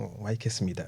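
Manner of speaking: very soft, hushed, murmured protest tone. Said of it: "my son's on this".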